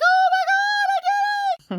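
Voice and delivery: very high, drawn-out scream. Retelling jumping off the high dive: imitating someone screaming. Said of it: "jump off just screaming".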